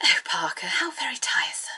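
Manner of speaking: relaxed upper-class, breathy half-whisper, faintly sarcastic murmur. Sitting in a car, speak to Parker in Lady Penelope's posh, slightly sarcastic voice. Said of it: "posh yet slightly sarcastic voice".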